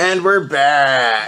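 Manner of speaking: the word back stretched long. Retelling running into the living room while they recorded: Jimmy Fallon impression. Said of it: "in my best Jimmy Fallon impression".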